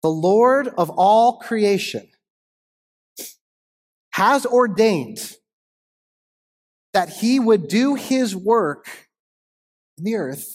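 unhurried reading, weighing each word. Reading aloud a quote that has stayed with the speaker, reading slowly. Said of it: "I'm going to read it slow".

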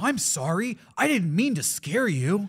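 cheery, wholesome, friendly American voice. Joking about dubbing a character whose face isn't shown, all-American friendly voice. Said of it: "a really all-American friendly voice".

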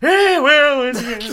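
booming loud character voice. Speaker says they do one impression and performs an Abraham Lincoln impression. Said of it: "That's a pretty good Abe Lincoln".

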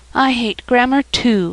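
with a sigh. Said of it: "sighed [name]".

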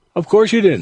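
kind-hearted, comforting tone, pitched a little up. Narrator reads Mrs. Treat answering Toby once the guests are seated again: kindly tone. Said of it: "said Mrs. Treat in a kindly tone".

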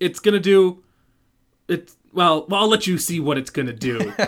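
put-on pervy voice. Retell what Art Carney says about the machine he hooks up, as a pervy Art Carney impression. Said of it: "in his most pervy way possible".

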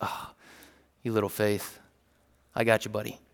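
acted, compassionate, reassuring tone full of empathy. Speaker imagining Jesus saying it with empathy, reaching his hand down: acting out compassionate reassurance. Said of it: "full of empathy and compassion".

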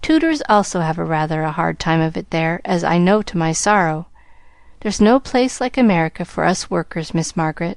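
plain

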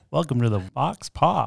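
slow, creaky put-on FM radio DJ voice. Greeting the show's listeners after a request for a radio voice: put-on radio voice. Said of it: "I gotta put my radio voice on".

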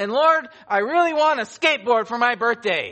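booming, very loud, high-pitched shout. Retelling a joke about a boy praying: imitating a very loud voice. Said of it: "with a very loud voice".

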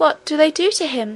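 high, trembling, quavering voice. Narrator reads Irene's question to the little miner, in a trembling voice. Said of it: "with a trembling voice".

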